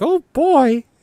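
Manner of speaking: very high, loud cartoon mouse voice. Speaker trying a voice for a toy adventure video, Mickey Mouse voice. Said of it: "That is Mickey Mouse".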